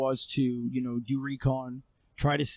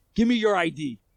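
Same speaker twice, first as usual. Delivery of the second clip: loud, pitched-up, pushy and confrontational; 6 semitones higher, 6 dB louder than usual. Retelling confronting a man after an attack, the speaker is retelling an aggressive demand. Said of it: "I'm being very aggressive with him".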